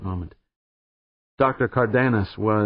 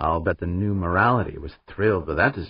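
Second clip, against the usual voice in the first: plain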